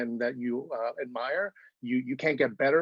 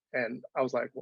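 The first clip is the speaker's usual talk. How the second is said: usual speaking voice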